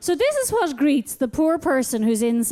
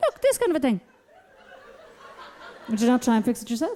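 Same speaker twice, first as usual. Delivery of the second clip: put-on very calm, even-tempered, quick delivery; 3 semitones lower than usual. Retelling a partner's reply to an angry complaint: imitating a very calm voice. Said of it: "I get this very calm voice coming back at me".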